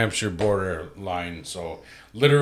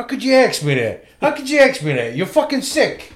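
put-on high-pitched, outraged voice in Italian American accent. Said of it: "That's Joe Pesci".

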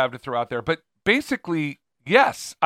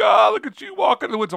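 tongue-in-cheek, ironic, mocking teasing, pitched up; 7 semitones higher, 4 dB louder than usual. Mocking critics of a picture from a walk in the woods, tongue-in-cheek mocking imitation. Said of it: "you're being tongue in cheek".

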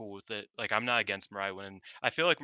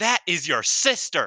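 very loud, drawn-out, high commentator yell; 9 semitones higher, 10 dB louder than usual. Retelling a wrestling commentary call: imitating Chris Charlton yelling. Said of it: "Chris Charlton just yells".

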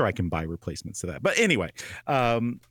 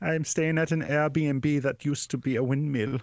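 put-on, higher-pitched alien voice with Scandinavian accent; 3 semitones higher than usual. Going on with the joke alien character: Looney Tunes Martian with Scandinavian accent. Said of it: "the Martian from Looney Tunes after he lived in Scandinavia".

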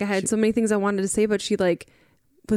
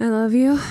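breathless, louder; 5 dB louder than usual. Saying I love you back to the other speaker, out of breath. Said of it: "I'm out of breath".

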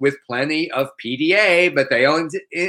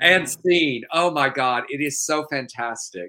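plain

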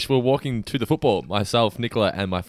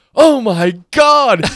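very high, very loud screamed exclamation; 12 semitones higher, 12 dB louder than usual. Telling a story, acting out a friend screaming as a man stretches his arm out: retelling a scream. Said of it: "My friend Phil just screams out".

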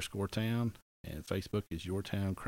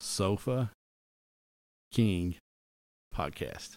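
very slow, deliberate, each word drawn out; 4 dB quieter than usual. Podcast host saying the show's name for listeners, real slow. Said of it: "I'm going to say it real slow".

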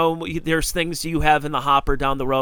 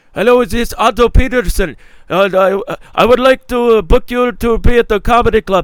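put-on very thick Lebanese accent, high and loud; 7 semitones higher, 8 dB louder than usual. As the owner of the Funny Stop calling Otto to book him, Pete's very thick Lebanese accent. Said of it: "the owner is Lebanese and has a very thick accent".

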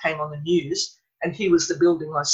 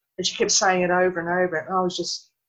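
plain

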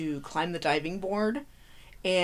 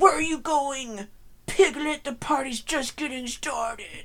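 horror villain voice, pitched up a notch; 6 semitones higher than usual. Narrating a scene, the speaker voices the character's lines in a Freddy impression. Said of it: "Do you like my Freddy impression?".

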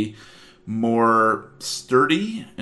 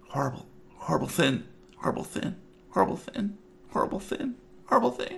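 barely audible, hushed, muttered whisper; 9 semitones higher, 7 dB quieter than usual. After a failed roll, the game master voices a character whispering under his breath. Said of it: "he's whispering under his breath".

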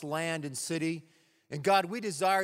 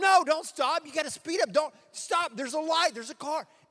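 put-on shrill all-out yelling, very high pitch; 11 semitones higher, 4 dB louder than usual. Dad recounts his daughter driving, retelling his own yelling at her to keep going. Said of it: "I'm yelling at both my kids like I've never yelled".

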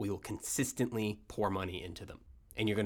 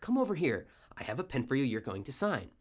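fake pleasant, friendly tone; 4 semitones higher than usual. Retelling someone at a boardroom table calling a man over: imitating a fake pleasant voice. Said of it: "in a pleasant voice".

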